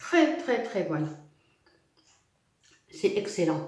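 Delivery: muffled, food-filled mouth. Tasting the almond-filled pastry just shown, the speaker talks with mouth full. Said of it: "c'est pas bien de parler la, la bouche pleine".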